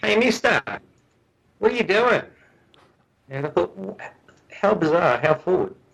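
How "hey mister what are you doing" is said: put-on heavy, pitched-up Australian accent, very direct. Retelling how a man walked straight up and spoke, in a very Australian accent. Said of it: "he says to me in a very Australian accent".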